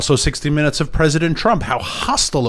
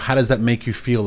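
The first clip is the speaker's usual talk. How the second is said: plain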